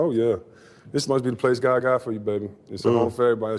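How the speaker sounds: plain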